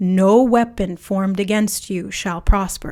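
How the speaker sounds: forceful, commanding, powerful, intense delivery. Speaker repeats a declaration to listeners: powerful, intense voice. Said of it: "Do you feel the power in my voice?".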